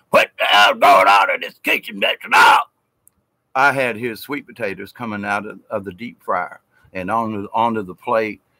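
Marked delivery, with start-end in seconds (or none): 0.1-2.6 loud, raised holler. Retelling how a man hollered at him across the kitchen, retelling a holler. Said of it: "holler at".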